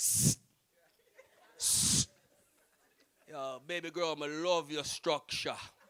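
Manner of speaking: put-on very low, slow, drawled Jamaican accent. Retelling how a cousin spoke to a girl, in a jamaican accent. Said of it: "because of his Jamaican accent".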